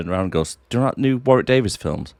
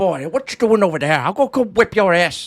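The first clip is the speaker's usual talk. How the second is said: shrill, very high, fake, bad Irish accent; 11 semitones higher than usual. Acting out a film character having a go at another character, in a put-on irish accent. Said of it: "he does kind of put the accent on".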